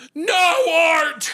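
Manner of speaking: put-on very high, loud, grieving old-woman outburst. Retelling a grieving grandmother's reply at the funeral home: imitating her outburst. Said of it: "my grieving grandmother goes".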